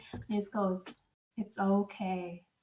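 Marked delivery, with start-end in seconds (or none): 1.4-2.3 very deep, steady, calm reassuring voice. Imagining a character comforting a sobbing woman, in a very deep, calm voice. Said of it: "the voice is very deep and calm".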